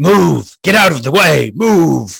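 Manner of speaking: commanding shout. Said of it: "I just look at them and go".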